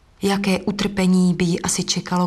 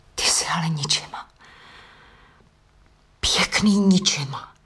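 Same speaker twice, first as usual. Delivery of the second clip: said in a whisper. A woman whispers to a man who refused to walk her home, whispered. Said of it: "zašeptala".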